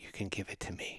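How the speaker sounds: soft whisper. Retelling own words whispered to sick children at night: retelling a whisper. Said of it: "I would whisper into their ear".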